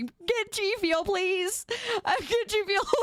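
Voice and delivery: play-acted pleading voice. Joking about sucking up to sponsors while on leave: mock begging. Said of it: "I'll be begging everybody".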